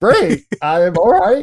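stunned, disbelieving, high, drawn-out incredulous tone. Retelling own reply on hearing the studio wants the movie: imitating own incredulous reply. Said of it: "the most incredulous".

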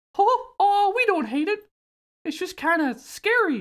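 very high, swooping cartoon mouse voice. Retelling Mickey's line from a game scene; Mickey voice. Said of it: "to get into the voice".

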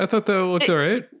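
put-on Canadian accent. Discussing a film's effects, one co-host disagrees with the other in a Canadian accent. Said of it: "I said that like a Canadian".

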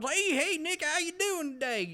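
put-on rural Southern man voice. Describing a super nice man he loves, imitating a redneck guy. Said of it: "he talks like this and goes".

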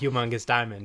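ordinary delivery

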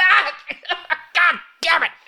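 very high screaming in agony, pained. Voicing a character who was shot and fell: screaming in pain. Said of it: "he is screaming and coughing".

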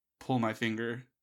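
normal talking voice

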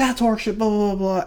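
high, irate, angry ranting yell. Retelling an angry customer at a store counter: imitating a customer screaming. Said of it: "screaming and yelling at me".

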